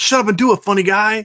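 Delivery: put-on high little-kid voice, yelling. Retelling a Wedding Crashers scene as the little kid: imitating a kid yelling. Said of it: "why are you yelling at me?".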